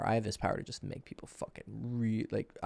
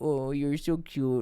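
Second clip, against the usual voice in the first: put-on slow, drawn-out babyish baby talk; 4 semitones higher, 3 dB louder than usual. Showing how talking dirty sounds: speaking softly, baby talk. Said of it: "I'm speaking softly".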